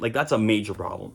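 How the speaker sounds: ordinary talk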